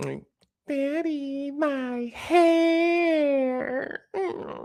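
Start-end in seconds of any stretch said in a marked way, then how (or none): 0.7-4.0 put-on very high, very slow, drawn-out teasing girl voice. A father teasing his daughter, imitating her in a mocking female voice. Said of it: "like a female voice until I started like talking".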